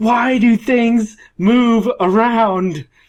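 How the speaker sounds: very high, slow, nasal, whiny yell. Recalling how Travis yelled after knocking something over, nasally, whiny Travis voice. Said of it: "In just a nasally, whiny voice".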